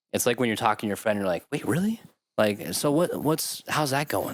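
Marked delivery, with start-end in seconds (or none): 1.5-4.3 put-on high, childlike, curious tone. Demonstrating how you'd react when talking to a friend, with childlike curiosity. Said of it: "a childlike curiosity".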